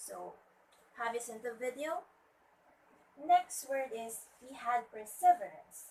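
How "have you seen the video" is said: pitch climbing upward on video. English intonation lesson, a question read with rising pitch on video. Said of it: "rising intonation because this is a question".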